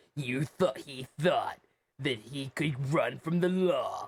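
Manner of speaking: bad, terrible movie-trailer announcer voice. Describing a murder suspect, terrible movie-trailer announcer voice. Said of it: "my terrible trailer announcer voice".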